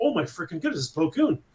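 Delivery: normal talking voice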